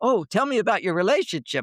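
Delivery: thrilled, eager, excited, high-pitched delivery. Retelling how the women on The View asked, imitating excited women. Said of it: "They're all excited".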